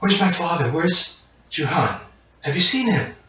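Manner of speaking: put-on high, small, little young girl's voice. Game master voicing an eight-year-old half-orc girl running to the players, young girl's voice. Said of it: "a small voice, a child, a child's voice".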